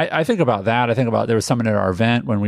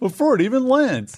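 put-on, very high, fake-sincere testimonial voice; 13 semitones higher than usual. Joking about a client testimonial for an event: insincere testimonial voice. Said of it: "That's my lack of sincerity testimonial voice".

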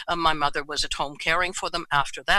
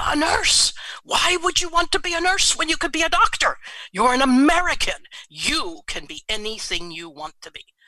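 mock full-throated bellow, loud and pitched up; 9 semitones higher, 3 dB louder than usual. Recounting what he bellowed at home that night, retelling a man's bellow. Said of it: "he bellowed, literally".

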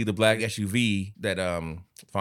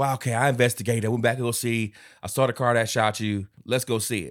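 ordinary talk, nothing marked

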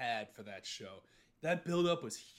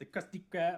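put-on cartoon character voice; 4 semitones higher than usual. Retelling a SpongeBob episode, carrying the pizza around: SpongeBob voice. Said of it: "I can't do it anymore".

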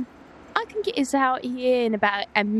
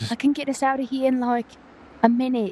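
confiding, secretive aside. Game player in another room speaks to teammates in a hushed tone. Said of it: "I'm speaking in a more hushed tone".

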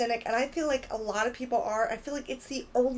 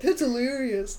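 put-on fake polite laugh; 3 dB louder than usual. Retelling how the boyfriend mimics her courtesy laugh: imitating a boyfriend's mock courtesy laugh. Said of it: "he'll just say it like I said it".

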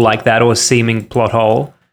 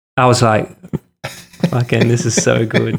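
usual speaking voice

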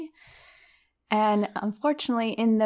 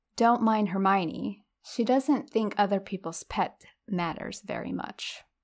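ordinary talk, nothing marked

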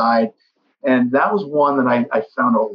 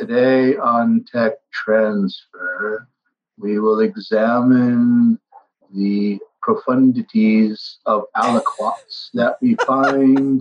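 flat, monotonous, droning lecturing monotone. Explaining how they didn't want Tech Transfer to sound, in a Ferris Bueller's Day Off teacher drone. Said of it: "sound like that monotonous teacher from Ferris Bueller's Day Off".

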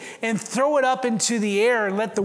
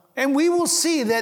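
usual speaking voice

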